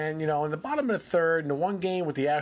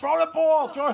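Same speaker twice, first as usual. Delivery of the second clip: mock yelling, much higher; 11 semitones higher, 5 dB louder than usual. Recalling how the team yelled at a player holding the ball, retelling the yell. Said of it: "we would yell".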